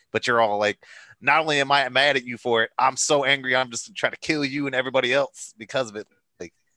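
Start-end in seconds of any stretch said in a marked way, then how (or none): none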